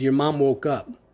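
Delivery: ordinary talk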